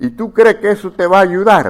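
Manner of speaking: high, mocking, needling, sarcastic tone. Retelling a joke where a wife questions her husband: imitating a sarcastic question. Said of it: "fue sarcásticamente y le dice".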